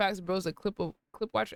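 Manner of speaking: plain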